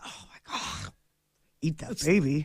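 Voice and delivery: breathy, whispered little odd monster voice. Reacting to a photo of a baby, in a weirdo monster voice. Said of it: "talking that weirdo voice".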